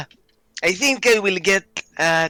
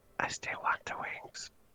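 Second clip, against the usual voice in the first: very quiet, soft, breathy whisper. Whispering in character to a companion during a scene: whispering. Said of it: "Are you whispering".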